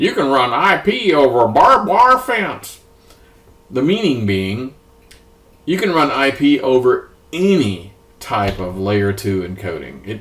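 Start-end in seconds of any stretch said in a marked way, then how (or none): 0.0-2.8 put-on Texas accent, higher pitch. Quoting a networking saying in a fake Texas accent. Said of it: "my fake, uh, Texas accent".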